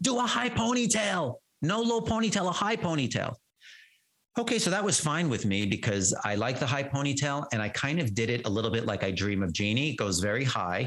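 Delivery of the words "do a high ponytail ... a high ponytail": put-on very high, squealing, screaming child voice. Retelling how she started screaming for a hairstyle: imitating a child screaming. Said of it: "started screaming".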